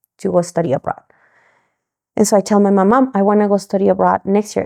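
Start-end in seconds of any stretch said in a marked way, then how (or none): none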